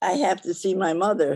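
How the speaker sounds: voice full of terror, terrified, fearful. Role-playing an old person who must see their mother: terrified, fearful voice. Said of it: "the terror in my voice and the fear".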